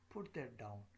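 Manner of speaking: pitch falling away on the word down. Teaching intonation with spoken commands, pitch falls on 'down'. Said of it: "in all these sentences, my uh, voice is dropping down".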